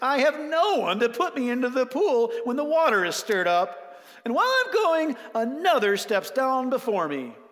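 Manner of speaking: high, loud, whining tone. Speaker reading the sick man's answer to him, in a whiny voice. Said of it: "so I'll do the whiny voice".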